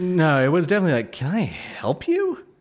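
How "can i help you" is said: put-on very slow, very high, disbelieving, incredulous tone. Retelling what was said to a stranger by the car: imitating own incredulous tone. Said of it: "I was fucking incredulous".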